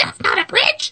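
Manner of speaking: tiny, squeaky little puppet voice, very high. Imitating a little voice caught on a recording by a bridge, little kid-like voice. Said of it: "it sounds like Elmo or Grover".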